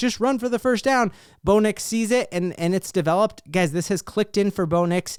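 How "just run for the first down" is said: high, urgent, acted-out screamed yell. Retelling a reaction to a play: imitating own past screaming. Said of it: "at first I'm screaming".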